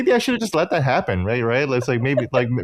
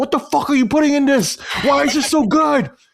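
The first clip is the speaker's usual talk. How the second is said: acted, very high, angry, indignant outburst; 4 dB louder than usual. Retelling IShowSpeed's reaction after a bite of Jollibee chicken, mock-angry IShowSpeed impression. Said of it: "He was like angry".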